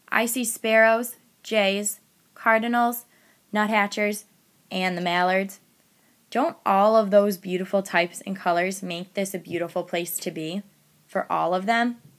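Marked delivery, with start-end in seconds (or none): none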